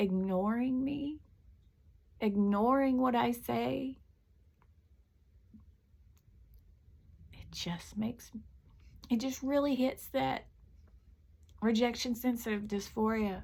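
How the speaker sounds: crying while talking. Talking about feeling not good enough, crying while talking. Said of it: "I hate it that I'm crying".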